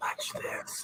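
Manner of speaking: soft, mischievous whisper.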